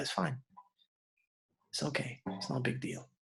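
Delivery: soft, quiet, dismissive brush-off. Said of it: "I was like".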